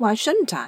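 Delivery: rash, reckless, unguarded tone. A narrator reads a character's reply to an anxious companion: reckless. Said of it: "Sarah said recklessly".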